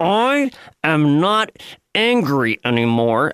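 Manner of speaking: put-on voice through gritted teeth. Acting out Hillary speaking to journalists, with mock gritted teeth. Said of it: "through gritted teeth".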